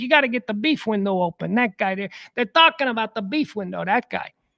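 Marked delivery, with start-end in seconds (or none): 0.0-1.5 put-on genuine local Chicago accent. Retelling what the guy who brings in the vegetables says, in Chi Chi's Chicago accent. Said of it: "He's got a real Chicago accent".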